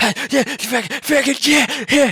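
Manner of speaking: very high, shrill, loud strung-out addict voice. Showing how a Jet-addicted game character should sound: imitating a Jet addict character. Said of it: "supposed to be addicted to, like, Jet going like".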